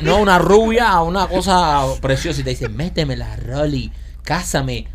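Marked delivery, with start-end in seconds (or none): 2.7-4.9 low, soft put-on Colombian accent. Speaker acts out a beautiful blonde woman's line, in a put-on Colombian accent. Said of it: "con acento colombiano".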